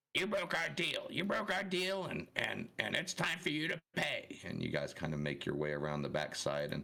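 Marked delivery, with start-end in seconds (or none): 0.1-4.4 cackly female voice, pitched way up, high and cackling. Narrator voices a figure in the corner of the scene, cackly female voice. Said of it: "Kind of a cackly female voice".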